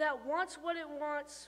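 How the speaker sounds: ordinary delivery, nothing marked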